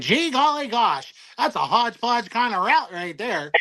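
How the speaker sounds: high, comical, corny voice. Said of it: "he talks like the stereotypical Caucasian".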